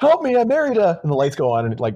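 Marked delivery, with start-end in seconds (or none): 0.0-1.0 play-acted, very high, sudden cry. Retelling what a man shouted when the hotel power went out, retelling a yell. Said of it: "Charlie yells".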